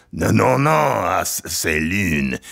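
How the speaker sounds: slow, stumbling, drawn-out French pronunciation. Retelling what a french teacher said, imitating a french teacher. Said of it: "the French teacher says".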